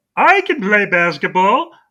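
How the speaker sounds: high, slow, swooping, sing-song goofy cartoon voice, drawn out. Retelling a scene where someone answers the Looney Tunes, in a Marvin the Martian-like voice. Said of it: "Marvin the Martian, is that you?".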